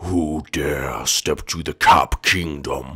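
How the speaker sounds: deep put-on voice. A resident of the Cap Kingdom challenges the visitor: deep Mr. Cap voice. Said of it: "you have a deeper voice than I do".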